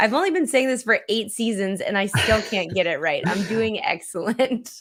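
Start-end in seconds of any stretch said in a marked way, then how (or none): 3.3-4.8 sarcastic, ironic delivery. Telling the co-host how they are doing: sarcastic. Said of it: "You're doing sarcastically excellent".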